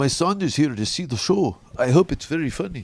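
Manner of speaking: bad, terrible put-on Swedish accent. Retelling what a big door guy said before the show, terrible Swedish accent. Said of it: "It's a terrible Swedish accent".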